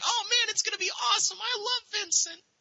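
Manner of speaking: play-acted, very high, wide-eyed naive voice. Recalling first seeing the game's screenshots as a young, naive person: mimicking naive younger self. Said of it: "I was a young, naive person".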